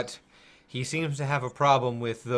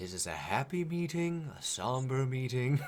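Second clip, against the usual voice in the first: quiet muttering under the breath; 7 dB quieter than usual. A narrator voices a character looking through his robes, muttering to himself. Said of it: "You hear him muttering".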